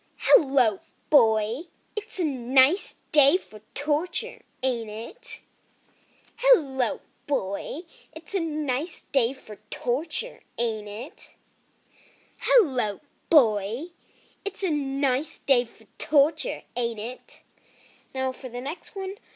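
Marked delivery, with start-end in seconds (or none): 0.2-17.4 shy but sinister, slow, raised, dark evil taunt. Reading an audition line as the character Terra: auditioning as Terra, shy but dark and evil. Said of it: "I'm gonna be trying out for Terra".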